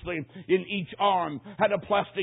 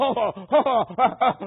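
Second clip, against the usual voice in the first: high, loud screaming laughter. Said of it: "he just screamed out".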